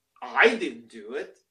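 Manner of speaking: slyly. Narrator reads a boy answering the pastor's class question, slyly. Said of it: "said slyly".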